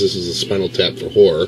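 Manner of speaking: normal talking voice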